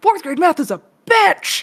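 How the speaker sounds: mock exasperated, very high-pitched, frustrated yell. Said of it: "she was yelling at us".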